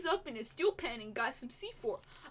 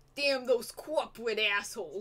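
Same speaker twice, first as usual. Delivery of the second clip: put-on New York accent on every word; 4 semitones lower than usual. Redoing a character's line on request, now in a New York accent. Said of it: "Do New Yorker".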